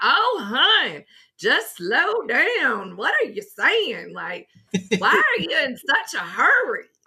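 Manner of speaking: bad fake southern drawl, high and swooping. Retelling what a lady said to her for talking in a hurry, horrible southern accent impression. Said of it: "my horrible impression of a southern accent".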